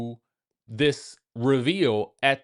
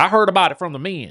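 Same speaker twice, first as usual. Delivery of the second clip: put-on raised-volume Southern accent; 4 semitones higher, 6 dB louder than usual. Retelling a cast member's remark at a dinner: imitating a southern accent. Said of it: "she got a Southern accent, so she talked like that".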